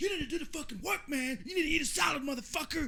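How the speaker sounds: intense, shrill, super aggressive high in-your-face shouting. Showing how a man who did prison time talks: mock-aggressive retelling. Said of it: "Super aggressive".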